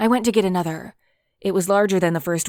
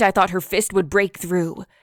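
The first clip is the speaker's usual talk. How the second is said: plain reading voice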